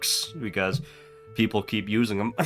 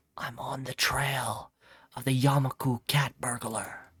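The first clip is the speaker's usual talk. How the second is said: soft, secretive, confidential half-whisper; 3 semitones higher, 8 dB quieter than usual. After checking for eavesdroppers, a character speaks in a confidential half-whisper. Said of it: "Yuko lowers her voice to a confidential whisper".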